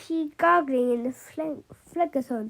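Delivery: ordinary delivery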